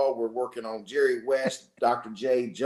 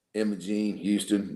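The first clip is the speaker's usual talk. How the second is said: deep, dropped voice; 4 semitones lower than usual. Retelling how the speaker's brother came in calling out the parents' names, deep voice. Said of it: "says in that deep voice".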